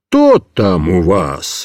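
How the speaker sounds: very deep, very low, very slow, swooping. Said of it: "загремел жандарм".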